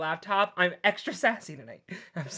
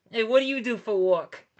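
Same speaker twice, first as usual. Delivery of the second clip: put-on New York accent; 4 semitones higher than usual. Imagining doing crowd work, asking a guy in the audience about his job: New York accent. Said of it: "Why I just go to a New York accent".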